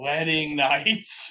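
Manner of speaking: feverish, dazed, out-of-it delirious voice. Retelling a scene where a feverish character drops onto Shoma, in a mock-delirious voice. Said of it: "in a delirious voice just says".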